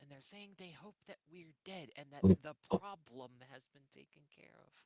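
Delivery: whispered voice. Speaking as a character reporting overheard serpent folk talk: whispering. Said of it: "She is whispering".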